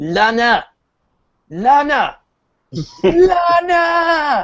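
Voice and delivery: thick French accent, very high pitched, drawn out. Imagining someone from Ubisoft backstage, in a very French accent. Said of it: "be going in like a very French accent".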